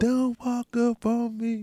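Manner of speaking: little small high voice, very slow and drawn out. Retelling what the other speaker says in their fights: imitating someone's little voice. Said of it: "you be in that little voice on me".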